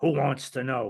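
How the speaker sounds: put-on rough-sounding man's voice. Retelling a phone call with a tough-sounding man answering: rougher than Marlon Brando in The Godfather. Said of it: "he would make Marlon Brando in The Godfather sound like an angel".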